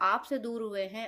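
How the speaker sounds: normal talking voice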